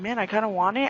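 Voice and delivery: ordinary talk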